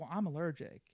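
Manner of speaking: ordinary talk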